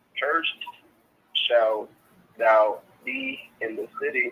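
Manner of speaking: slow, deliberate, halting, broken-up reading aloud. Asked by another to read the verse again, reading slowly. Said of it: "but read it slow".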